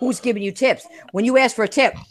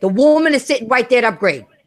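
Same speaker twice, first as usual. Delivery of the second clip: mild, exasperated, frustrated yell. Retelling yelling at the screen during a game: imitating own yelling. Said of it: "And I'm yelling".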